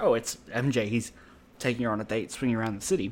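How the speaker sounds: ordinary delivery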